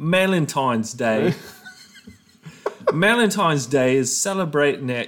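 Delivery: fake, put-on Cockney accent. Reading a script aloud to the audience: fake Cockney accent. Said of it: "this is like Cockney".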